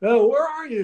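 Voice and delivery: shrill, very high, loud cartoon-character voice. Retelling a phone call with Charlie Finley, Mister Magoo-like voice. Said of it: "a sound a little bit like a Mister Magoo".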